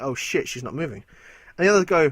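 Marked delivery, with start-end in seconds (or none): 0.0-1.0 mock sudden alarm, panicking. Retelling finding a friend collapsed on the floor: imitating own past panic. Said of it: "instantly, I'm panicking".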